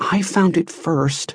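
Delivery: fierce, hushed, muttering kept under wraps. A girl answers Joe, who won't give it back, muttering fiercely. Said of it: "She muttered even more fiercely".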